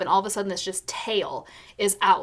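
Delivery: ordinary talk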